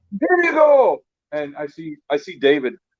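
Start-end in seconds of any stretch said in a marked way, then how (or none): 0.2-0.9 put-on character voice, yelling, higher pitch. Retelling posing as Fezzik for a kid's photo: yelled Fezzik voice. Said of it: "I did my best Fezzik voice, and I yelled".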